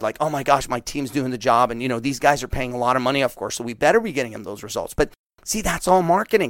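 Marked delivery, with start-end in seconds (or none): none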